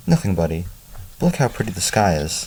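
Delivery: ordinary delivery, nothing marked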